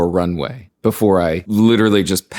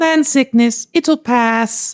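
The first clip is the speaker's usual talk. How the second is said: put-on very high, squeaky little girl voice. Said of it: "the little girl goes".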